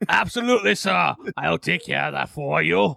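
rough, raspy voice of a longtime heavy smoker. In a role-play, a character replies to someone called sir in a smoker's voice. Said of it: "You sound like a 30-year-old who's been smoking for 20 years".

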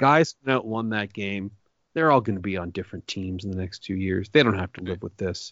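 sad, dejected, deflated voice. Quoting a new york talk radio host about a game: imitating a sad voice. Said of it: "you could just hear the sadness in his voice".

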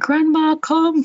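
play-acted shrill patois shout, pitched very high. Retelling the moment a brother shouted that grandma was arriving: imitating a shout in patois. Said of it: "I heard my brother shout".

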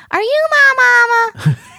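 put-on little cartoon duckling voice. Retelling a cartoon where a duckling walks around asking: imitating a cartoon duckling's voice. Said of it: "I didn't ever use that voice".

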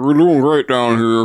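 deadpan, poker-faced, straight-faced delivery. Retelling a movie scene about reporting conditions below: imitating Peter Weller. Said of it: "Peter Welliver's like".

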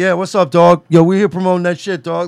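laid-back regular dude voice. Imagining a regular dude on a talk show: Eddie Kingston impression. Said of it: "if Eddie Kingston came out right now".

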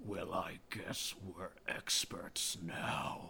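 hushed, breathy, whispered undead king voice. Showing how the Lich King would deliver a line, in Lich King voice. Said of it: "this is how the Lich King would say it".

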